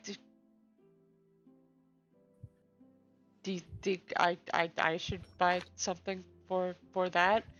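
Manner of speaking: hushed, stumbling, stammering half-whisper. Voicing a character who leans forward to ask another character: half-whispering in character. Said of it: "lean forward and whisper to Constell".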